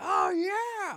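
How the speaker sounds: very high, exultant, whooping scream. Recalling stepping out on the street after release, the speaker retells a scream. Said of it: "I like screamed".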